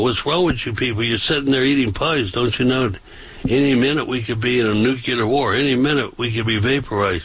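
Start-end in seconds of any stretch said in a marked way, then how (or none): none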